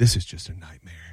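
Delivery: muttering under breath. Retelling a late-night wait, imitating someone muttering under breath. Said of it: "he's muttering under his breath".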